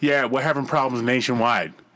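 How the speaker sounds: imitated talking while chewing gum. Retelling a phone call with a cable support agent, imitating her talking while chewing gum. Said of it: "you hear her popping a gum".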